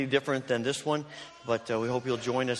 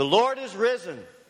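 very loud, pitched-up, roof-raising shout; 8 semitones higher, 5 dB louder than usual. Leading the final round of the Easter call and response, shouting. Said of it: "we'll take the roof off the building".

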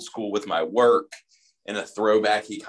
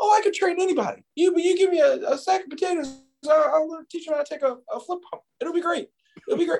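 very high-pitched, proud, boastful tough-guy voice. Retelling what the wrestling trainer used to say, imitating his high-pitched voice. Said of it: "he had a very high-pitched voice".

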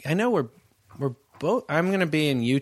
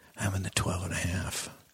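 hushed, soft whisper; 7 semitones lower, 8 dB quieter than usual. Retelling what a guy in a kilt said: imitating a whisper. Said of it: "kilt and he whispers".

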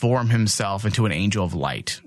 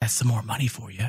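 low-toned, voiced, hushed stage whisper; 4 dB quieter than usual. Retelling a film scene after a killing, imitating Dutch half-whispering. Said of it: "Dutch whispers to Tate".

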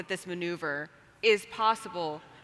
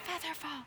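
very quiet, soft, pitched-up half-whisper; 8 semitones higher, 14 dB quieter than usual. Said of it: "whisper to Jim".

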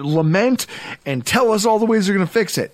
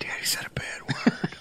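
put-on very quiet, hushed little-kid whisper. A father imitates his son whispering to his wife: imitating a child whispering. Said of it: "He just kind of whispers".

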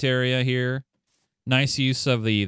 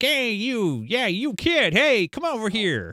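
put-on old-timey carny voice, very high and slow; 9 semitones higher than usual. Imitating an old-timey carny at the fair: old-timey carny voice. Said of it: "looks like one of those old-timey carnies".

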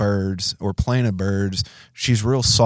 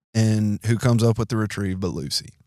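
usual speaking voice

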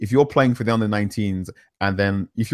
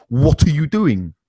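high, screaming voice, put-on; 6 semitones higher, 4 dB louder than usual. Retelling one player screaming at another: imitating Kurt Zouma screaming. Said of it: "just screaming at Shawcross".

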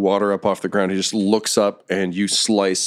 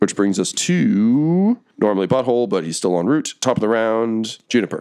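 ordinary delivery

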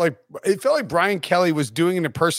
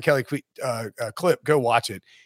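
ordinary delivery

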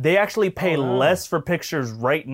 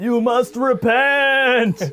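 put-on ghostly voice, higher and louder; 9 semitones higher, 4 dB louder than usual. Imitating a politician asking why wizards can't make money: Bernie Sanders impression. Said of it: "My Bernie Sanders sounds like a ghost".

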